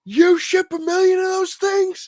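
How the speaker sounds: very high, loud screaming shout. Retelling shouting down from a ledge to a buddy: retelling a scream. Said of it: "I scream down to him".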